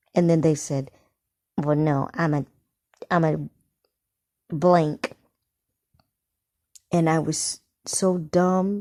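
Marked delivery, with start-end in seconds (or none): none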